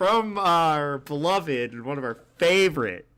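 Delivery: slow, loud, heavily sarcastic praise. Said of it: "as I say this sarcastically".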